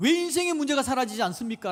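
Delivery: high, loud, protesting, demanding tone. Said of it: "하나님께 따집니다".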